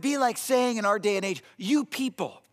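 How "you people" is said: higher-pitched, frustrated, exasperated tone. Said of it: "almost frustrated tone to it".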